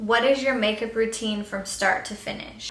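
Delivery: ordinary talk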